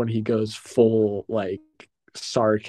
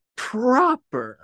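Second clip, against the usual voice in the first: very high-pitched, angry, befuddled disbelief; 14 semitones higher than usual. Retelling a film scene, doing the reply as an angry Harrison Ford. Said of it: "a very, like, angry Harrison Ford".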